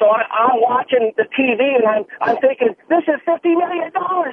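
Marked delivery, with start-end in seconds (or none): 2.9-4.3 high, excited, thrilled scream. Retelling watching a lottery drawing with a cousin's ticket: retelling own scream.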